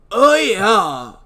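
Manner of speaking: loud bro voice with stretched, drawn-out "yeah". Acting out a scene at the morgue, a speaker voices Mace in a bro voice. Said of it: "I tried to do just a normal voice, but it didn't happen".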